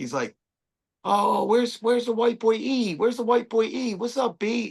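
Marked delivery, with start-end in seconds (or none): 1.0-4.7 put-on New York street accent, pitched up. Retelling a stranger who walked up to him, New York accent. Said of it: "he's talking like he's from New York".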